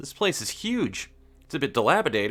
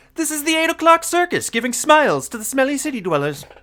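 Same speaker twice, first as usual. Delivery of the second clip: loud, very high-pitched put-on character voice; 11 semitones higher, 8 dB louder than usual. Reading a game character's line aloud, trying a Stamper voice. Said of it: "I'm going to at least try a Stamper voice".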